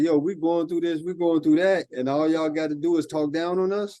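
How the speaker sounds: ordinary talk, nothing marked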